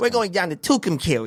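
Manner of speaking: high cartoon rabbit voice. Repeating a town name the way a cartoon said it, Bugs Bunny voice. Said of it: "like Bugs Bunny".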